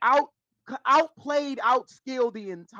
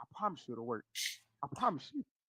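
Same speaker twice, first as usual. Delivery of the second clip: close, hushed, very quiet whisper; 8 semitones lower, 14 dB quieter than usual. Retelling how Faker whispered in a player's ear: imitating Faker whispering. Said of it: "Faker literally whispered in that man's ear".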